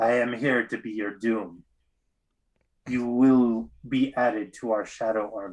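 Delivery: weird, disembodied voice as if through a steam pipe. Voicing a headless figure's disembodied voice: voice through a steam pipe. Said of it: "speaks in this weird kind of um, like speaking through a steam pipe".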